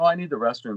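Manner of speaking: ordinary talk, nothing marked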